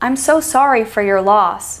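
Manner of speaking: pitch falling steadily across the whole sentence. Showing how pitch expresses feeling, example sentence with downhill pitch. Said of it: "See how that pitch goes downhill?".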